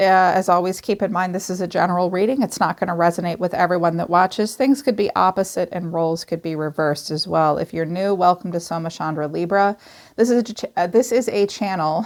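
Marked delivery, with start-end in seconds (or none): 10.2-12.0 stuttering, stumbling over words, higher pitch. Tarot reader welcoming new viewers to the channel, stuttering. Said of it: "Sorry, I'm stuttering today".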